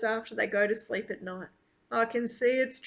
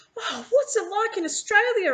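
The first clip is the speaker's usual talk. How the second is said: overexcited, very high, tripping over words; 10 semitones higher, 5 dB louder than usual. Meeting an Australian man, the narrator asks him about Australia, so excited. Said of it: "I'm so excited I can hardly get the words out".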